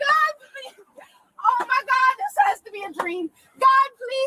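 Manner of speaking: tearful, high, drawn-out crying-out voice. Pleading during an arrest, crying out to God. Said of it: "She's crying out to God".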